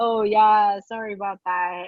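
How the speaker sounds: mock awkward laughing delivery. Retelling how a teacher reacted to an uncomfortable moment, imitating an awkward laugh. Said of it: "he like awkwardly laughed".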